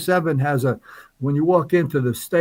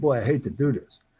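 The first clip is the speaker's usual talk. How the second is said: put-on muttering under breath, quieter; 3 semitones lower, 5 dB quieter than usual. Retelling waking someone at three in the morning: imitating muttering under breath. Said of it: "I said under my breath".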